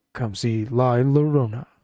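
put-on movie trailer voiceover announcer voice. Retelling a movie commercial's announcer line: imitating movie trailer announcer voice. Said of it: "the typical, like, movie trailer guy".

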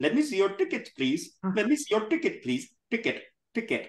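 put-on Indian accent, retroflex t in "ticket". Demonstrating retroflex consonants to learners, indian accent. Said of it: "I told you about the Indian accent?".

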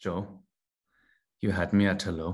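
romantic delivery, in character. Delivering a romantic film line on request: romantic, as Uhtred would say it. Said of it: "a little more romantic this time".

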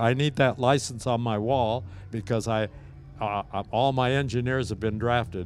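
ordinary delivery

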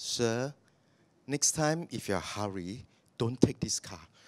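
soft, courteous, polite little lady voice. Retelling what the after-sales service lady told him: imitating a polite little lady. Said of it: "Nice little lady voice, very polite".

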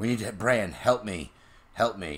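put-on berserk, desperate tone, high and loud. Retelling a scene where Catelyn goes berserk: imitating Catelyn going berserk. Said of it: "Catelyn just going berserko again".

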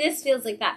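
normal talking voice

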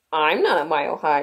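ordinary delivery

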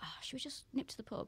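soft, voiceless whisper. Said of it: "my boyfriend went".

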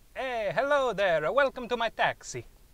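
put-on Italian accent. In an improv scene, greeting a passenger as a taxi driver, italian accent. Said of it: "Why are you Italian?".

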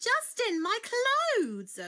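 very high, loud, shrill, swooping outcry. Reading a story: after two characters bump into each other, one cries out. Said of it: "cried Lucy".

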